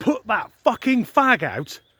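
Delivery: acted, scaled-down, mild, furious scream. Retelling what was screamed at a smoker on the forecourt: imitating own scream. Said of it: "And I screamed at him".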